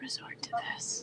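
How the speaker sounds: high, breathy whisper. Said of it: "actors who will sort of resort to this".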